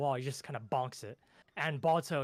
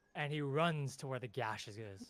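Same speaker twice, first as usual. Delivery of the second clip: ordinary delivery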